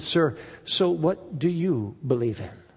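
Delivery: hushed, very quiet, soft voice. Retelling the question they once put to a man they call sir, in a very quiet voice. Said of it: "in a very quiet voice".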